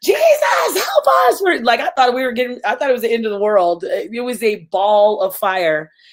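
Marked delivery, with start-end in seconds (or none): 0.0-1.4 acted, very high, top-of-the-lungs scream. Retelling seeing a fireball coming toward the home: imitating someone screaming. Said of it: "screaming at the top of my lungs saying".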